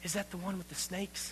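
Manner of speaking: very quiet, frightened, very hushed whisper. Retelling a frightened girl's question to friends: imitating a scared whisper. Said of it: "And in a whisper".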